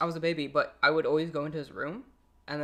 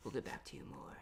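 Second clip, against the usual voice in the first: put-on sultry, hushed, breathy sexy whisper; 4 semitones lower, 17 dB quieter than usual. Speaker retells a man reporting deaths, imitating his sexy voice. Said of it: "can you say that in a normal voice?".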